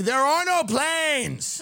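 play-acted, full-on, high, drawn-out screaming outburst. Retelling what was screamed out in history class: imitating himself screaming. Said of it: "I just started screaming".

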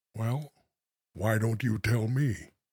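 sorrowful, very soft, quiet and low. Asked to say the same line in different tones, the speaker says it sad.

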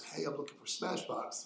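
put-on speech with an English accent. Retelling a man at the studio back door asking directions: english accent. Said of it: "with an English accent".

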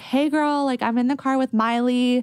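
very casual, high, breezy tone.

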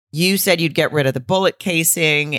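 plain

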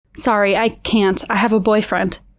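ordinary delivery

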